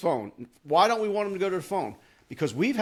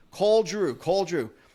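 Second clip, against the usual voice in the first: plain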